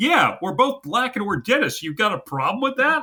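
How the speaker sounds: mock snippy, high, defensive tone with attitude. Retelling a movie scene as the son: imitating someone with attitude. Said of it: "cops an attitude".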